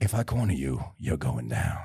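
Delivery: very low, hushed, barely audible murmur. Quoting a quiet coffee-shop scene from Heat: quiet Al Pacino impression. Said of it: "below fifteen decibels is when he's talking to De Niro".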